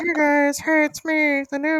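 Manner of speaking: silly, very high-pitched sock puppet voice. Left without a co-host, the host introduces a new co-host in a sock puppet voice. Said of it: "I'll just do a voice".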